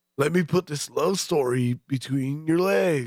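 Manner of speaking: West Coast surfer-dude voice, totally laid-back beach talk. Joining a bit about the surfer accent: Keanu Reeves surfer voice. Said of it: "Like Keanu Reeves".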